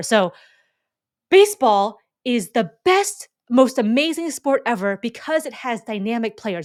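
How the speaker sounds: thrilled, excited, gushing enthusiasm. Demonstrating how to deliver an example line for an exercise, excited. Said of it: "you're excited".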